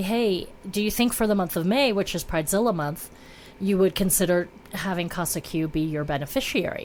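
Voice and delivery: ordinary talk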